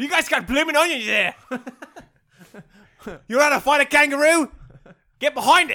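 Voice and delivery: put-on, loud, very high Australian accent. Imagining showing up in a wig, the speaker talks in an Australian accent. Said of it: "Speaking Australian accent".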